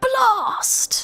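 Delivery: very high-pitched, exclaiming British accent. Saying 'blast' the only way it works: British accent. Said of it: "you have to say it in a British accent".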